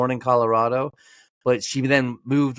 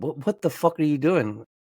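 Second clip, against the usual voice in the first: acted words broken up by laughter; 3 semitones higher than usual. Retelling a dad's reaction to bringing the placenta: imitating laughing while talking. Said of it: "my dad was laughing, going".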